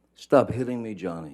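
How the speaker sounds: acted, frantic, upset, high-pitched freaked-out screaming. Recounting a screaming incident from twenty feet away, imitating Miss Heard screaming. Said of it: "she's screaming in, in her best um, freaked out, upset voice, high pitched".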